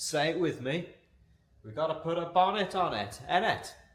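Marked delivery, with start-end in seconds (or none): 1.6-3.7 best-effort put-on Welsh accent. Inviting someone to say a line together: best Welsh accent. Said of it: "in your best Welsh accent".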